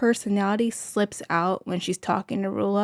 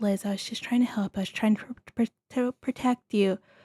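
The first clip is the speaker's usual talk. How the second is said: put-on gentle, soft, nice-sounding voice; 4 dB quieter than usual. Imitating a reality show cast member's nice, soft put-on voice. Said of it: "Joellen puts on this nice, soft voice".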